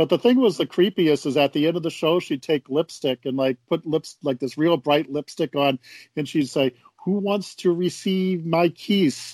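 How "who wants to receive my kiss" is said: high, halting, very drawn-out broken English. Retelling how a children's show host ended her show: imitating the host's bad English. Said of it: "Like that".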